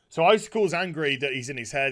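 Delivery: ordinary talk, nothing marked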